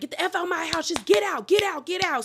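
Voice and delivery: mock furious, high, angry yell. Retelling a reality show fight where a wife yells at her husband: imitating someone yelling. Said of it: "She starts yelling at Troy and was like".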